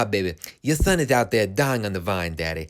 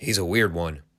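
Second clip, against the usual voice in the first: put-on muttered aside, lower pitch; 5 semitones lower than usual. Retelling a commentator's remark after the bell: imitating David Crockett muttering under breath. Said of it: "under his breath".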